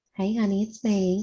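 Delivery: whispering softly. Casting message to a companion in character: whispering. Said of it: "I'm going to whisper to him".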